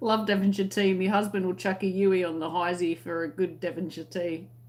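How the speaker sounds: usual speaking voice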